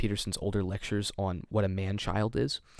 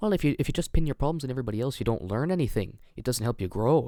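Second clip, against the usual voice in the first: put-on, attempted Scottish accent, lecturing tone; 4 semitones higher, 4 dB louder than usual. Mocking a speaker's advice by quoting him: imitating him in a Scottish accent. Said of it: "Why are you Scottish in this accent?".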